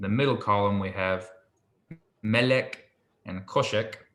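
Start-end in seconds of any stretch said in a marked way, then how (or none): 2.2-3.9 slow, with first syllables of Melek and Koshek stressed. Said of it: "I'll go through the ones with the accent marks".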